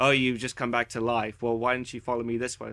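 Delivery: very monotone, completely flat and even delivery. Retelling a Destiny beta walkthrough: imitating Peter Dinklage, very monotone. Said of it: "Peter Dinklage being very monotone".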